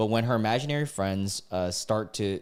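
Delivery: plain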